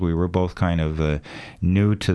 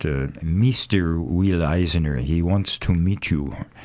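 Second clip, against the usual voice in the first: put-on unhurried French-accented English. Retelling how a man at the Louvre approached him, in a French accent. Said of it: "in his French accent".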